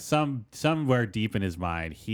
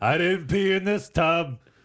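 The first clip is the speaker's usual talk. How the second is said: put-on elderly politician voice, higher and louder; 9 semitones higher, 4 dB louder than usual. Doing Bernie Sanders about a shared tub: Bernie Sanders impression. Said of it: "Yours was pretty spot on".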